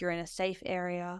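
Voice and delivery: calm, soothing, reassuring yoga-class tone. Showing how a patient is calmed before ketamine: soothing yoga voice. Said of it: "I have to use my soothing yoga voice".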